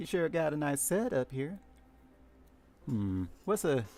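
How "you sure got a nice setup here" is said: put-on Southern country accent. Trying out voices, the speaker attempts a southern country accent. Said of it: "a southern Big Mom country accent".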